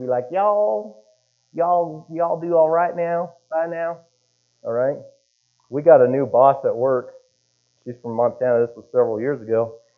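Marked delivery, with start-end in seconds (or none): 0.3-5.0 very slow, lazy, drawn-out southern drawl. Imitating a person at work who speaks with a southern accent. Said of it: "speaks with a southern accent".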